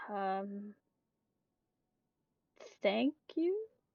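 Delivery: hesitant, unsure, awkward and uncertain delivery. Voicing a character thanked with a compliment: unsure how to respond. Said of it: "she doesn't know how to respond to that".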